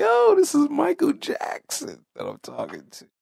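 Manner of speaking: mock starstruck gushing, very high, swooping excited voice. Retelling a man's reaction on learning who he's talking to, imitating an excited man. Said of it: "You could just hear the excitement in his voice".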